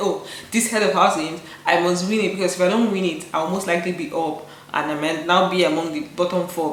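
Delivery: plain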